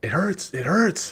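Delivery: frenzied, manic, very high screaming. Game master voicing a man pinned to the ground, manic screaming. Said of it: "he kind of screams like in a mania".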